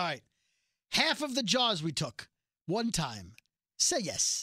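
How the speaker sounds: choppy, halting non-native broken English. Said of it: "again with her broken English".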